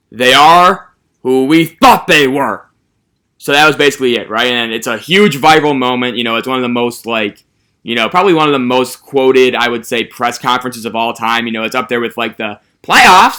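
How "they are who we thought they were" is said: stone-cold, slow, loud, weighty pronouncement. Retelling a coach's famous press conference line: stone cold Dennis Green voice. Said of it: "this stone cold voice, I'm gonna butcher this impression".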